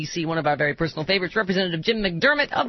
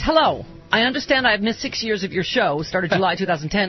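ordinary talk

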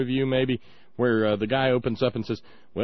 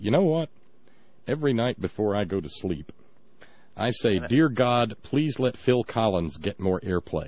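put-on deadpan tv-style delivery, slower pace; 3 semitones lower than usual. Recalling how he would pop up and speak to the camera, do a deadpan David Letterman imitation. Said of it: "do that deadpan to the camera".

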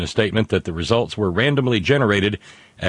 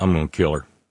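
mock, dry, expressionless, low, flat deadpan; 5 semitones lower than usual. Retelling how someone reacted once they had heard enough, deadpan. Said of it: "Agnes just deadpans".

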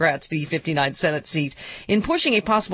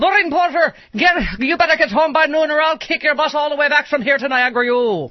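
thick put-on Irish brogue, higher pitch; 9 semitones higher, 6 dB louder than usual. Recalling a college friend's mother, the speaker does a thick irish brogue impression. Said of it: "whip out my one Irish impression".

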